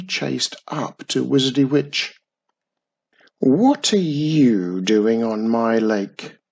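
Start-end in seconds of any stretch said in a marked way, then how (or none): 3.4-6.3 contemptuous sneering, "you" drawn out. Narrator reads the quickery's line to Wizardy Witch; sneering. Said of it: "Sneered the quickery".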